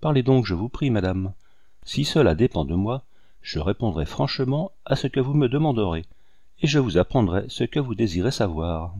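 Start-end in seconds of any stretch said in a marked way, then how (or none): none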